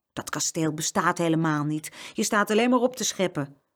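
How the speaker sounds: ordinary delivery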